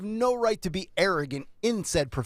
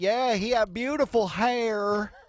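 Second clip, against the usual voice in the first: very slow, big southern drawl, "hair" stretched; 2 semitones higher than usual. Quoting a man who was talking to a reporter, in a big southern drawl. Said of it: "he had a big southern drawl".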